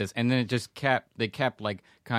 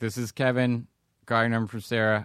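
imitated, very robotic mock delivery. Retelling the first text sent to Olivia: imitating a very robotic tone. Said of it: "very robotic".

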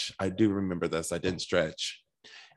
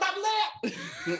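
acted, very high, panicked cry of alarm. Retelling how a queen backstage reacted to overdrawing her lip: imitating someone freaking out. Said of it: "she starts freaking out".

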